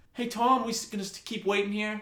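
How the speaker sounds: high-pitched yell calling out across a distance. Retelling a couple in a waiting room calling across the room: retelling someone yelling. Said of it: "the couple sitting there like yelling".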